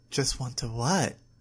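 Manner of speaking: plain reading voice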